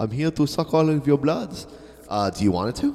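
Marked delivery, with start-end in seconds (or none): 0.0-1.7 put-on vampire voice. Trying out a voice effect, introducing himself: Dracula voice. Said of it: "is Dracula".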